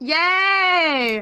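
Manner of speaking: excited little cheer, high and drawn-out. A player reacts to an ally's turn in a tabletop game, excited cheer. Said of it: "I don't know why I sounded so excited".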